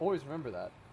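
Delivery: mocking, ironic tone. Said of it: "I'm being sarcastic".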